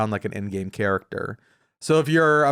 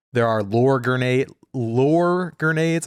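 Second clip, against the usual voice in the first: Southern US drawl, with lure drawn out; 2 semitones higher than usual. Listing fun gadgets in a game, tripping over a word: southern accent. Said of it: "my southern accent".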